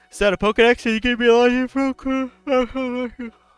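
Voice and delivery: speaking through a yawn. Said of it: "Sorry, I'm yawning".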